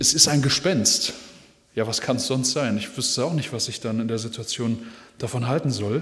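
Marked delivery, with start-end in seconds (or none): none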